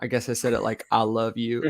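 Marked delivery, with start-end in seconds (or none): 0.9-1.7 put-on Southern US accent. Recreating how he once said I love you: Southern American accent. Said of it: "you really sound southern".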